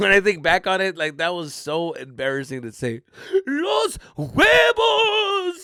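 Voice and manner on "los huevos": very high, tearful, choked shout, "huevos" drawn out. Retelling finally getting words out in a team huddle: imitating a choked-up shout. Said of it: "that was the noise I made".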